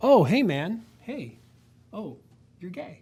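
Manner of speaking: sarcastic acted-out voices. Acting out a sarcastic scene of getting called a bigot: sarcastic acted-out scene. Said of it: "I'm gonna be sarcastic for a second".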